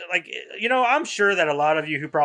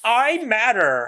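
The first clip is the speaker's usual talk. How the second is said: put-on high, spoiled, ridiculous girl's whine; 6 semitones higher, 3 dB louder than usual. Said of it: "I hear it in that voice and the tone".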